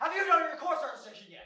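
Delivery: loud yelling. Acting a skit, asking a freshman about course registration: yelling. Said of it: "Why are you yelling at me?".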